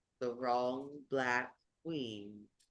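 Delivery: very deep, very slow, soft voice. Voicing the queen answering the players in the game, in a very deep, very slow voice. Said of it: "her voice is very deep and very slow".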